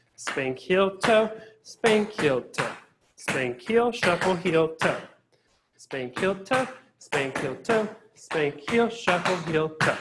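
slow, drawn-out, counted calls.

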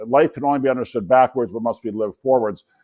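ordinary talk

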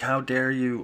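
mock condescending tone. Retelling the attitude of the home they grew up in: imitating a condescending tone. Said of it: "really condescending".

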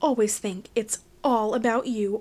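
plain

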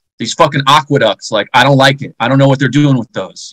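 mock freaked-out, acted-out panicking. Speaker acting out how people of past times felt, mock freaked-out. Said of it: "freaked out".

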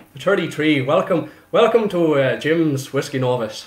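bad put-on Irish accent. Speaker trying an Irish accent on camera for the show intro: attempted Irish accent. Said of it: "I'm trying to do an Irish accent on camera".

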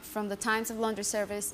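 ordinary delivery

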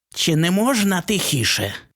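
high, swooping, nasty, venomous hiss. The creature at the door George opened speaks to him: vile hiss. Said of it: "мерзенним голосом просичала тварюка".

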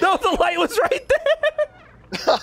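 very high-pitched voice, laughing while speaking.

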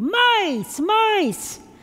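high-pitched, loud, frightened scream.

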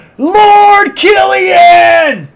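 shrill, very high, drawn-out loud yell. Calling to someone far away in outer space: yelling really loud. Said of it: "I gotta yell really loud".

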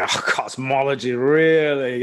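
lordly, unimpressed, harrumphing British scoff. Speaker recalling an audience member's usual remark at cosmology talks, in Jeff's booming British voice. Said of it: "his great booming British lion voice".

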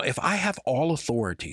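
ordinary talk, nothing marked

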